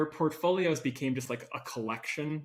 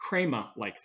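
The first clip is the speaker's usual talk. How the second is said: fun, playful put-on Boston accent; 4 semitones lower than usual. Making fun of how Boston people would say it: fun Boston accent. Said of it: "with a fun Boston accent".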